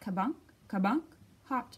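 plain

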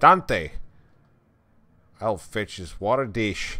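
loud put-on Scottish brogue. Voicing another character in the scene who calls to the dog, in a Scottish accent. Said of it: "Every other voice is gonna be a Scottish accent".

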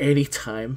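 reluctant, grudging delivery. Retelling a reply to a work text: saying it begrudgingly. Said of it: "I say begrudgingly".

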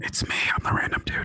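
ridiculous, over-the-top asmr whispering voice. Plugging a Wednesday stream, finishing the plug in an insanely ridiculous ASMR whisper. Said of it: "That was like an insanely ridiculous whisper".

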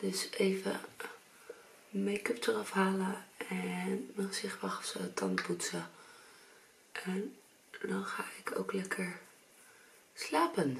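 slow, easy, drawn-out, unhurried relaxed talk. Getting ready for bed while others sleep nearby, talking softly. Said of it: "Ik moet een beetje zachtjes praten".

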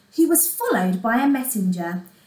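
ordinary delivery

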